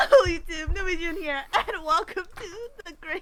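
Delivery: giggly, laughing while speaking.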